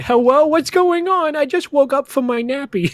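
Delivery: cutesy put-on baby talk, high-pitched. Imagining someone just waking up while their house burns, in baby talk meme voice. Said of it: "that baby talk meme".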